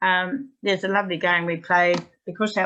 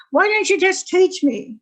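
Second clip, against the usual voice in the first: very high, shrill, loud, nearly screaming voice; 12 semitones higher, 6 dB louder than usual. Retelling what a student nearly screamed at the speaker, imitating near-screaming. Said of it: "she was nearly screaming".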